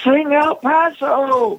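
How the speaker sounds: play-acted, very high-pitched hollered-out demand. Recounting a man at the bar waking up again to shout a request: retelling a holler. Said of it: "he hollered out".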